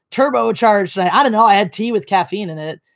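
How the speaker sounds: plain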